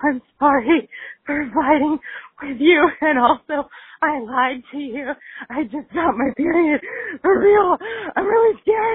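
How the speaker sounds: put-on crying voice. Retelling a tearful call to her mom: retelling her own crying. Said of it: "So I call my mom crying".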